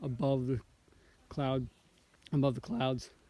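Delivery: voice cracking, breaking partway through the phrase. Describing a foggy lake view from the trail: voice cracking. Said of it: "My voice just cracked there".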